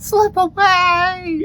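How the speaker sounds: high, slow, stretched-out scream.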